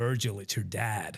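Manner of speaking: put-on American accent, sounding like over the phone. Retelling a phone call from an unrecognized number, american accent. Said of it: "this voice said in an American accent".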